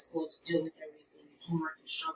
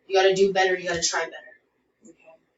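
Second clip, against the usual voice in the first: mock stern scolding tone, louder; 7 dB louder than usual. Acting out dad scolding about coming home late: imitating dad's stern tone. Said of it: "It's more stern".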